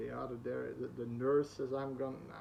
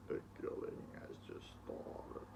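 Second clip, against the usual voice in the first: hushed, sinister, creepy demonic whisper; 8 dB quieter than usual. Describing a film villain to friends, you imitate how he talks, retelling a creepy voice. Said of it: "You know that creepy voice".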